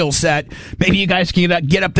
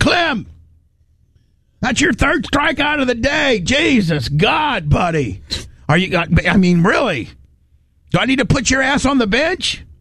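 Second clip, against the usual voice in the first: slow, pitched-up, scolding coach voice; 6 semitones higher than usual. Retelling how a coach scolded a player after a strikeout: imitating coach Fred Boggs. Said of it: "he'd go".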